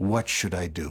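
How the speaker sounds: low, tired, worn-out, weary voice. Retelling what the President said after shouting for half an hour; imitating a weary tone. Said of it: "he said to me in a weary tone of voice".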